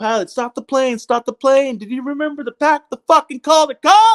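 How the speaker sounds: high-pitched shouted yelling. Recalling yelling at the pilot over the phone about the Calder Cup, retelling a yell. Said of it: "And I'm yelling at the pilot".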